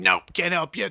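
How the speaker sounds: mock hostile bouncer voice, very hostile. Retelling what a bouncer said when asked for help: imitating a hostile bouncer. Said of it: "really hostile".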